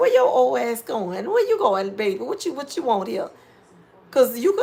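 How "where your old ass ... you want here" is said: confrontational, grilling, protective mom voice. Retelling what a younger man's mama would say: imitating his mama confronting me. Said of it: "She'd have been like".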